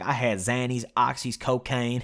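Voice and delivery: put-on slow, drawling cowboy accent. Retelling what a man said on the unit: drawling cowboy accent. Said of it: "he goes like in his cowboy voice".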